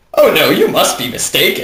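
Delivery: dramatic, theatrical cartoon pony voice. Trading put-on voices with the other speaker, using a Pony.mov pony voice. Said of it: "I just sounded like the one from from uh, Pony.mov".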